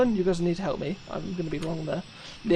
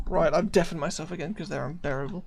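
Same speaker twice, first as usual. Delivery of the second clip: normal talking voice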